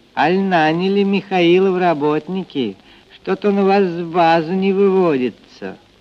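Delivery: openly taunting mockery. A narrator reads a woman's question at the pier, openly mocking. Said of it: "спросила с откровенной издевкой".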